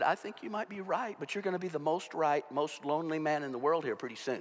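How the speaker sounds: ordinary talk, nothing marked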